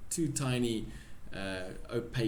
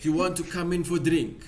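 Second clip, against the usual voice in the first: very loud, high put-on Russian accent; 8 semitones higher, 9 dB louder than usual. Talking about accent impressions, quoting a character in a put-on Russian accent. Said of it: "How do you do a fucking Russian accent?".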